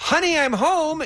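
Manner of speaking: very high, loud, acted-out, dripping-sarcasm delivery. Walking in on someone in their bedroom, retelling a really sarcastic greeting. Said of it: "in a really sarcastic tone".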